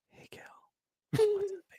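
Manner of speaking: very high, hushed whisper. Joining in on the bar pickup bit, imitating hushed whispering tones. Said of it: "The hushed tones".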